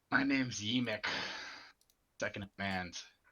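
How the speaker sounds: rasping, hoarse goblin voice. A goblin character introduces itself to the people speaking, in a raspy goblin voice. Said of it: "raspy goblin voice".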